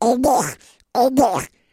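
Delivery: drawn-out, high, loud cartoon duck voice. Retelling hearing a little boy in Hollywood, do his words in a Donald Duck voice. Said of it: "that sounded like Donald Duck".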